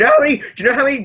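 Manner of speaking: voice cracking up very high. Speaker in a group discussion asking the others a question, voice cracking. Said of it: "my voice cracked there".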